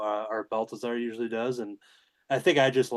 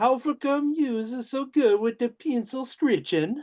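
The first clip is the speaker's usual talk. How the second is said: very high-pitched put-on character voice; 14 semitones higher, 4 dB louder than usual. Reading out a listener's question, trying to do the voice: put-on pop culture character voice. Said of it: "I'm gonna try to do the voice".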